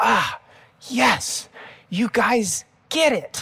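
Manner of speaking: mock delight. Retelling Jesus's reply to Simon Peter, acting out Jesus's joy. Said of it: "you can just hear the joy in Jesus's voice".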